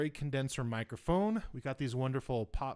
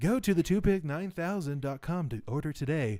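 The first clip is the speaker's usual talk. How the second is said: louder radio broadcaster announcer voice; 3 semitones higher, 5 dB louder than usual. Reading a joke sponsor ad, radio announcer voice. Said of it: "you be all, like, radio".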